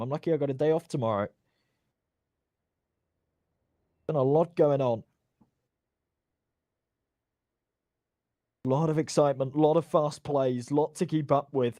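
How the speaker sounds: hoarse, strained voice. Commentating a long match after a shouty game: losing voice. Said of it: "I'm losing my voice".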